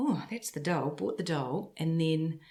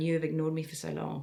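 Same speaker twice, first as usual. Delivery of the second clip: plain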